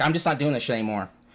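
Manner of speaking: ordinary talk, nothing marked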